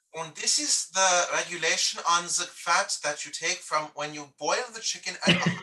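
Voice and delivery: put-on German accent. Showing how a technical cooking rule should sound, in a mock German accent. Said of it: "you need to do it with like a German accent".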